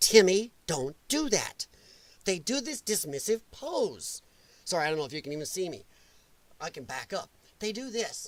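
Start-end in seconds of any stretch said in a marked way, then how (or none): 0.0-1.7 scolding, slow and deliberate. Demonstrating how you scold a child named Timmy, mock-scolding. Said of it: "That's how you scold a child".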